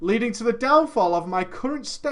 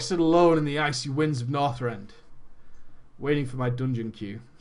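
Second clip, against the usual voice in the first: very low, deep, full epic warrior hero voice; 9 semitones lower than usual. Repeating his story after a listener says he sounds like Thor, Thor-like voice. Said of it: "You sound like Thor. ... Like Conan".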